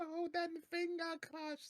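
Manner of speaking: put-on very high voice, heavy Japanese accent. Describing a fighting game to friends, quoting a character's special move: Gold Lightan Japanese accent. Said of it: "in like the most like Japanese accent".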